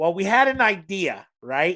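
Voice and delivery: put-on Minnesotan Midwestern accent. Retelling what the cake decorator said, in a Minnesota accent. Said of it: "She speaks in this Minnesota accent".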